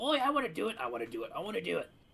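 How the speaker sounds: fast, high, eager, birdlike excited chittering. Narrator voicing the crows perched beside the listener, in an excited crow voice. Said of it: "they begin to chitter excitedly to you".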